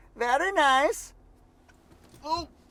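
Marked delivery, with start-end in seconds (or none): 0.2-1.1 put-on Kazakh accent, higher pitch. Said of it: "as Borat would say".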